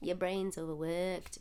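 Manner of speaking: put-on Scouse Liverpool accent. Imitating a woman in a true crime story: liverpool accent.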